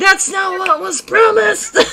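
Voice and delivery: very high, shrill shouted yell. A game master voices one of the fleeing creatures yelling back at the party. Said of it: "you hear one of them yell back".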